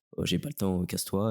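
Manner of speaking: normal talking voice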